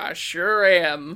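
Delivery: phony, put-on Southern US accent. Describing a character about to jump a bridge, fake Southern accent. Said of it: "he does a fake Southern accent".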